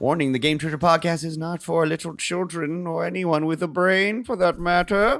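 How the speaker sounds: spooky monster voice. Podcast host gives the show's warning in a spooky monster voice. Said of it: "I'm talking like a spooky monster".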